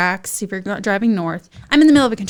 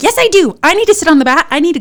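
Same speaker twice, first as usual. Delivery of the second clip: put-on yell, higher and louder; 9 semitones higher, 7 dB louder than usual. Retelling arguing with young nurses during labor: retelling own yelling at nurses. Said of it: "I'm like".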